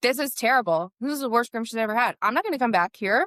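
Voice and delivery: play-acted irate, angry, griping, complaining voice. Speaker retells a customer complaining after his dog is brought back: imitating an angry customer. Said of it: "like mad that he had to pay".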